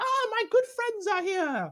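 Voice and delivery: put-on goblin voice. Voicing a goblin greeting the players as his good friends: goblin voice. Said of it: "That fucking voice, bro".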